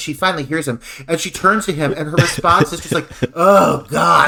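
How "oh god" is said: mock worn-out, put-out exasperation, loud weary sigh. Retelling a character's reply to an unwanted visitor: imitating an exhausted sigh. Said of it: "she's exhausted".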